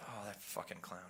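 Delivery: acted muttering under breath. Retelling a remark made while watching the news: imitating muttering under breath. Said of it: "I said under my breath".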